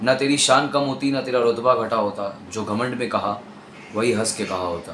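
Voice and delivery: ordinary talk, nothing marked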